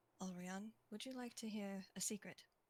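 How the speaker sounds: hushed, very soft, very quiet murmur. As Obelisk, sitting down next to Alrion, speaking very quietly. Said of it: "says just like very quietly".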